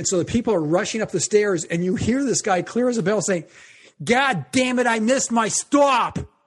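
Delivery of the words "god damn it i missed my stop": put-on thick, drawn-out New York accent. Retelling what a man said on a flooding train platform, really New Yorker voice. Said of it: "really New Yorker voice".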